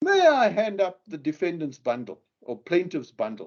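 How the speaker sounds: grandiose, very pompous, self-important tone. Describing court hearings, the speaker acts out counsel addressing the judge, imitating pompous counsel. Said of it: "in a very pompous voice".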